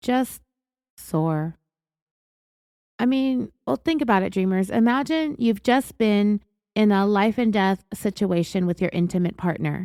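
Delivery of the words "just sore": put-on flat emotionless monotone, lower pitch. Retelling what Rebecca told detectives: imitating Rebecca's flat monotone. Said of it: "said it with such a flat, emotionless, monotone manner".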